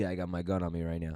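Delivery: very hushed half-whisper under the breath. Retelling a buddy at dinner saying he has his gun: imitating a half-whispered line.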